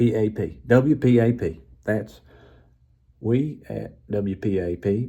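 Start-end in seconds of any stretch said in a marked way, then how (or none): 1.8-5.1 put-on Texan accent in radio announcer style. Doing a radio announcer in a made-up story, texas accent. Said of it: "That's a Texas accent".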